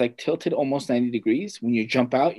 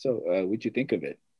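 soft, half-whispered under the breath; 4 semitones lower, 7 dB quieter than usual. Retelling what a man asked in an awkward, silent room, imitating a half-whisper. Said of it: "He's like whispering".

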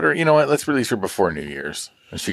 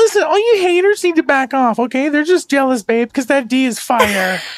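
put-on very high, loud, childish baby talk; 6 dB louder than usual. Asked by another speaker to say a line, in a put-on baby voice. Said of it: "the baby voice in women".

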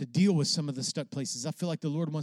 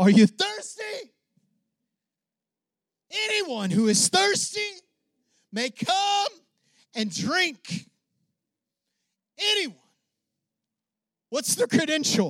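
very high, drawn-out shout at top of voice; 7 dB louder than usual. Preacher acts out a scripture quotation for listeners, retelling a shout at top of voice. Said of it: "he said it at the top of his voice".

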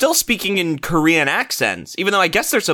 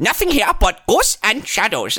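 bad Korean accent, sounded out phonetically; 4 semitones higher than usual. Speaker mocks a line given phonetically, imitating how the north korean says it. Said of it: "the North Korean's like".

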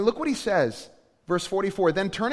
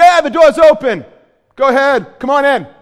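booming, loud, yelled put-on New York accent; 6 semitones higher, 15 dB louder than usual. Imagining someone yelling from inside the house, in a new york accent. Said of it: "I don't know why you would have a New York accent, or even if that was a New York accent".

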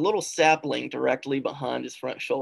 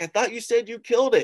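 pitched-up, hollered yell; 9 semitones higher, 3 dB louder than usual. Retelling a hunt, his dad calling back from afar: imitating his dad yelling. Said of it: "my dad yelling back".

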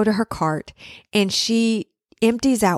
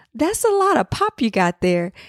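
very sweet, tender, sugary voice; 3 semitones higher than usual. Retelling what a woman said once the cart was done: imitating a sweet voice. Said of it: "she goes in a very like kind of sweet voice".

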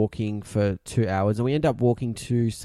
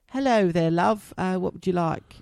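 good put-on British accent, woman's voice; 7 semitones higher than usual. Retelling what a server said, imitating a British accent. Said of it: "She had a really good accent as well".

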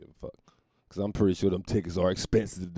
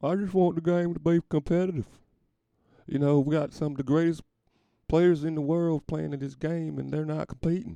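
put-on, high-pitched country accent with twang; 9 semitones higher than usual. Telling what he wanted before the game, country-ass Larry Bird accent. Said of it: "I'm going to do my country-ass Larry Bird accent".

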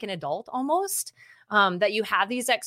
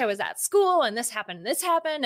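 mock teen voices, high-pitched and fast; 2 semitones higher than usual. Retelling daughter's friends hyperventilating about school: imitating teens' high-pitched, fast voices. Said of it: "their voices are higher pitched and faster".

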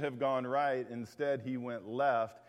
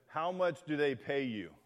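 composed, forceful, firm, assertive tone. Telling a story, acting out a man who regained his composure: retelling an assertive reply. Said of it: "in a much more assertive tone".

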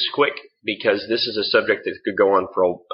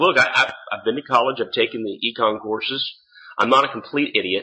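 plain

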